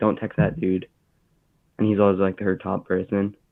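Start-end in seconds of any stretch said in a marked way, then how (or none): none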